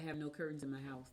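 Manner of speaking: normal talking voice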